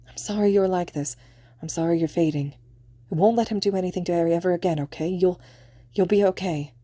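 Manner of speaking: hushed, quiet whispered voice. A narrator reads a character speaking to a child, whispering. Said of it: "Isuka whispers to the child".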